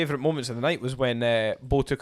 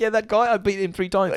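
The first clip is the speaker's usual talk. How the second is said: put-on Australian accent with raised pitch; 7 semitones higher, 4 dB louder than usual. Retelling a fighter's skit line: imitating Volk's Australian accent. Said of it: "you can do the accent".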